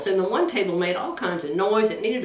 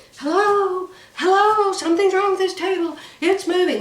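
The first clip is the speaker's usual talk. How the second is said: put-on very high, loud, shrill screaming; 10 semitones higher, 5 dB louder than usual. Retelling calling out when left alone on a moving table: imitating her own scream. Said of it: "I'm screaming".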